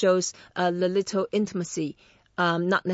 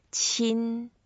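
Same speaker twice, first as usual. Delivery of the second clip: qin said with a flat, level first tone; 4 semitones higher than usual. Teaching the Chinese word qin in first tone: flat first tone on qin. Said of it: "is the first tone. So we make it flat".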